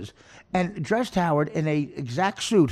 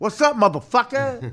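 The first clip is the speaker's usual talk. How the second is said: mock street voice, higher pitched; 7 semitones higher, 4 dB louder than usual. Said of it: "Because they talk like this".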